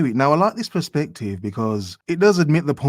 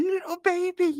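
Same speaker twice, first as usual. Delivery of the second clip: very high, soft, condescending, mocking tone; 6 dB quieter than usual. Repeating a woman's taunt aimed at grown men; imitating a mocking tone. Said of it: "Why does she have to say it in such a mocking tone?".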